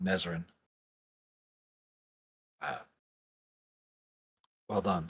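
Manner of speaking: hushed, very quiet, poorly concealed voice. Game master voicing the false king calling over to nezrin, with a mock-subtle call. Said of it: "try and call over to you subtly, air quotes subtly".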